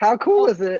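voice cracking and breaking. Co-hosts turn to talking about hockey, your voice cracking. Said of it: "my voice just cracked like a fucking middle schooler".

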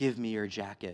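low, quiet, steady, commanding firmness. Reading a story, voice the ragman addressing a one-armed man: firm, quiet authority. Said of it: "said the ragman firmly".

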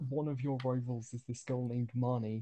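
ordinary talk

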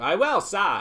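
Cockney accent, high-pitched and loud.

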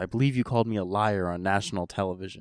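ordinary talk

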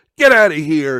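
put-on yelling voice. Retelling a wrestling segment, imitating Eric Bischoff yelling. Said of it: "Bischoff's yelling at Scott Hall".

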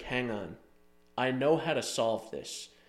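ordinary talk, nothing marked

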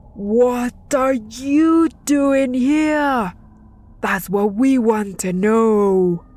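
slow bellowing dark lord roar, "you" drawn out. The lord of the underworld questions the trembling boy: roared. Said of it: "roared the Lord Mictlantecuhtli".

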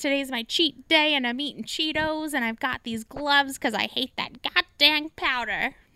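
put-on elderly woman character voice, chatting away. Retelling a favorite TikTok of an old lady: imitating an old lady. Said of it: "this old lady".

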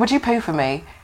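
put-on Australian man's accent. Retelling what an australian client asked, in an australian accent. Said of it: "he has the accent".

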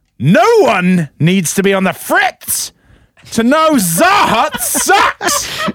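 shouting. Reading out a viewer's all-caps chat comment: yelling. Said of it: "You gotta yell".

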